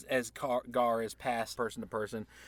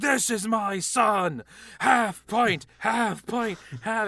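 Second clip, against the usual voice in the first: put-on very high drunken hollering; 10 semitones higher, 9 dB louder than usual. Game master voicing a drunk man carrying a player on his shoulder: drunken yelling. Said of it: "starts yelling at".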